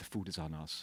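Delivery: very low, hushed whisper. Retelling how the manager spoke after a spill at a restaurant, retelling a whisper. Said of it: "He whispers".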